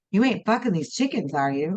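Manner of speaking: ordinary talk, nothing marked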